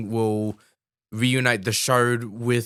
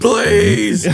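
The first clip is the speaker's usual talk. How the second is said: put-on aggressive creature voice, higher and louder; 9 semitones higher, 9 dB louder than usual. Retelling the Chamberlain turning on the Gelflings: imitating the Chamberlain, aggressive. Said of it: "And then he gets really aggressive".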